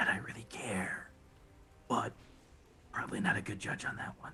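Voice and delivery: hushed, whispered under the breath. Playing a character who looks around and speaks to himself: said under his breath. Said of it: "says under his breath".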